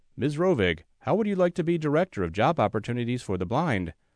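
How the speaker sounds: normal talking voice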